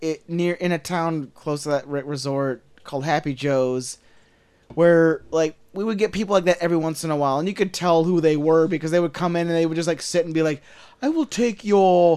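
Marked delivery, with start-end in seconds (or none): 11.0-12.2 put-on British accent. Imitating resort customers ordering at a pizza place: imitating customers with a British accent. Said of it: "Like they have a British accent".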